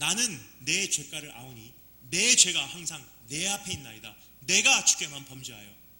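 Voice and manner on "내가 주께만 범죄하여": emphasis landing on 내가. Reading a verse aloud, emphasizing one word: stress on 내가. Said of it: "지금 제가 강조한 단어가 뭐죠? 나라는 거예요".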